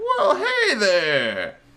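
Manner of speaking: very high, swooping turtle voice. Voicing a turtle shopkeeper greeting customers: turtle shopkeeper voice. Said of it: "a turtle starts slowly making his way ... He's like".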